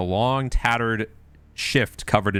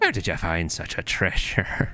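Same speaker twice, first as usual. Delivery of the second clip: put-on croaky, croaking old hag voice; 2 semitones lower than usual. Storyteller voicing the hag asking the group about Lulu: croaking hag voice. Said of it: "she croaks".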